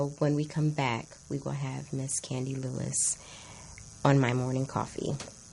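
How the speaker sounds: low, sultry, seductive, sexy voice. Show host announcing the guest coming up after the break, in a low sexy voice. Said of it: "Is that a sexy or low enough voice for y'all?".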